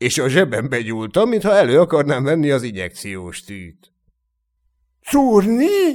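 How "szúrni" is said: very high, frightened, terrified voice. As the narrator pretends to reach for a needle, the other asks in terror. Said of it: "kérdezte rémülten".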